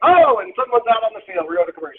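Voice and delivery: cheesy, corny sportscaster patter voice. Explaining how they steer the conversation back; corny sports announcer voice. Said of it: "like a corny sports announcer".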